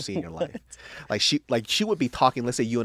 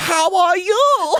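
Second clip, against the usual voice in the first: mimicked code-switched speech, higher and louder; 11 dB louder than usual. Retelling how the men greet her, imitating someone code-switching. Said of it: "they also fucking code switch".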